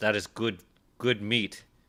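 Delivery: very stern, severe, dead-serious delivery. Voicing a character who puts a hand on a shoulder: stern. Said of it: "looks at you very sternly and says".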